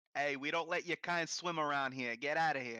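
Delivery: put-on street-style New York Italian accent. Doing a bit about New York racists who are Italian: New York Italian accent. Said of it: "the New York racists where they're like Italian".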